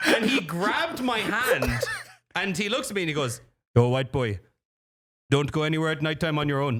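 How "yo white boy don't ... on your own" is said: put-on Jamaican accent. Retelling what a man said while handing back a passport: imitating a Jamaican accent. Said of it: "There's a Jamaican accent".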